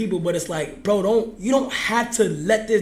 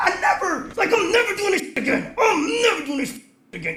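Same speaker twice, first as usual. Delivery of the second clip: put-on, mad and fed-up angry declaration; 10 semitones higher than usual. Swearing off ever doing the project again: angry. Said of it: "'cause now I'm mad".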